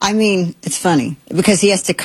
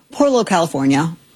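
normal talking voice

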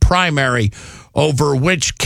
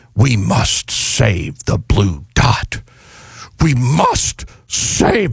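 slow, drawn-out, widely swooping delivery; 4 semitones lower than usual. Acting out an ad to save the blue dot: William Shatner impression. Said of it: "I'm like William Shatner now doing an ad".

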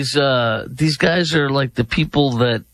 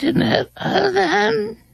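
mocking, put-on imitating tone. Mimicking how another speaker just said something, mocking imitation. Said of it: "Who talks like this?".

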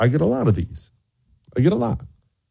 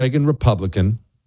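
plain

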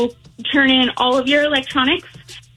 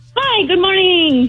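forced, overly energetic, bright and pitched-up; 6 semitones higher than usual. Greeted by the hosts, the speaker says good morning with forced high energy. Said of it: "I sound like I have absolutely more energy than I really do".

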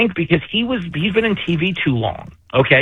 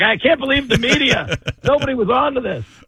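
put-on shocked astonishment, pitched up; 7 semitones higher than usual. Speaker mocks Jake Tapper's reaction to the media: mock-surprised Jake Tapper impression. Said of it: "Jake Tapper is acting all surprised".

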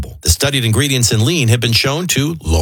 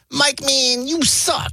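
very high-pitched, slow, drawn-out voice; 13 semitones higher, 4 dB quieter than usual. Retelling a running joke with a friend: Sean's voice. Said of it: "in Sean's voice".

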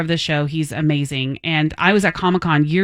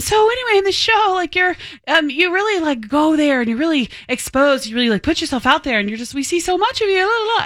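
mock flustered gushing ramble, very high and fast; 12 semitones higher than usual. Retelling talking to a celebrity crush she met: imitating her own nervous rambling. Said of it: "And I start rambling".

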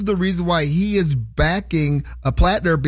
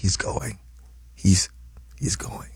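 whispered, much quieter and lower; 9 semitones lower, 7 dB quieter than usual. At a game, whispering to the YouTube and Facebook audience. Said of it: "I'm whispering to the YouTube audience".

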